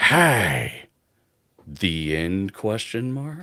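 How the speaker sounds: half-whispered little voice, drawn-out "hey". Narrating a talking potato stuck in a player's pack; potato half-whispering. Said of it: "the potato whispers".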